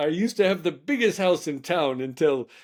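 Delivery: put-on Scottish or English accent. Retelling a funny Instagram video of a guy: imitating a Scottish or English accent. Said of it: "He's talking with a Scottish a-, or English accent".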